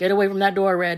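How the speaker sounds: loud, startled shout.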